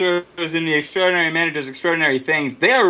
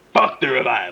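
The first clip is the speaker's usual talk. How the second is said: put-on ghoulish voice like a movie ghost; 7 semitones lower than usual. Saying a catchphrase for another speaker, sounding like Beetlejuice. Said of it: "You really do sound like Beetlejuice".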